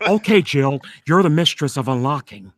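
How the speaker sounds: low, dropped, deep voice. Doing a requested video game bit, replying to Jill as Barry. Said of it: "Jill Valentine".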